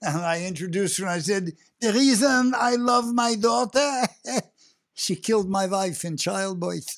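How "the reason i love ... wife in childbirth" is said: put-on cranky old curmudgeon's voice with a Yiddish accent. Recalling his first stage ad-lib introducing his character's daughter, old curmudgeon with yiddish accent. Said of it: "scabrous old curmudgeon with a Yiddish accent".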